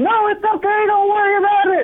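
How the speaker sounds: shrill, very high-pitched shrieking scream. Telling a story, the speaker acts out a woman screaming after him, retelling a woman's scream. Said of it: "she's screaming".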